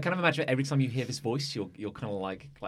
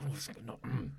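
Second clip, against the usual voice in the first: mumbling under breath, quieter; 9 dB quieter than usual. Voicing an unseen speaker near the players: muttering under their breath. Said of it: "a voice under, under, under their breath going".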